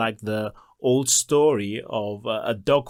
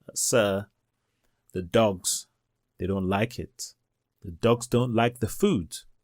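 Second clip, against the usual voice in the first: hushed, quiet, soft-spoken, understated; 3 semitones lower, 3 dB quieter than usual. Retelling an employee's interruption in a meeting, imitating someone speaking quietly. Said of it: "And Jones quietly says".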